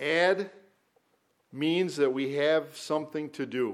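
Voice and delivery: carefully paced, slow, deliberate reading aloud. Reading a quoted author's words aloud to listeners, slowly. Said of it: "I will read this slowly".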